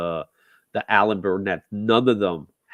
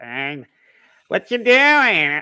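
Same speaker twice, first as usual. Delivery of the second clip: put-on high, slow, loud, drawn-out old-woman voice; 10 semitones higher, 6 dB louder than usual. Retelling how the new voice actress sounded: imitating Batgirl's old-woman voice. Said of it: "It, it sounded like an old woman".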